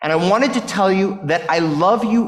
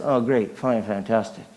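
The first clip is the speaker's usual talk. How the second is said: flat, hollow, unconvincing, empty cheery tone; 7 semitones lower, 6 dB quieter than usual. Retelling a greeting answered falsely: imitating a flat, unconvincing answer. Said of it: "But he said it like this".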